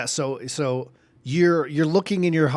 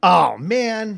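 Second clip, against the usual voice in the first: ordinary talk, nothing marked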